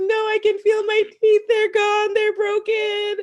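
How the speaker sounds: play-acted, very high, shrill, loud sobbing wail.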